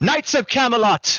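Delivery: very high, commanding, high-pitched rallying shout. Voicing a knight who stands up to rally troops: in-character rallying call. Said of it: "starts speaking out".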